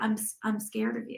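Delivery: put-on small voice. Describing how a calm woman answered, imitating her tiny little voice. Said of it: "the little voice".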